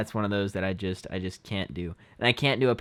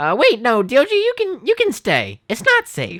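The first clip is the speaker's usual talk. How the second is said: very high, squeaky, loud, swinging cartoon voice; 9 dB louder than usual. Doing your Milo voice when asked what he says: Milo voice. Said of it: "something like that".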